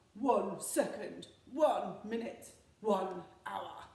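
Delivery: slow, loud booming monster voice. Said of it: "with our Gruffalo voices".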